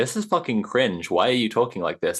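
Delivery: ordinary talk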